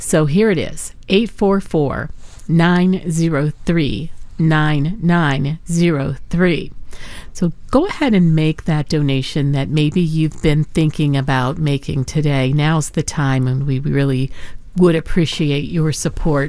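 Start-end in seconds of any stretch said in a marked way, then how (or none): 1.1-6.7 slow, carefully paced, deliberate delivery. Giving listeners the donation phone number, slow and deliberate. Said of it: "I'm going to say this slow".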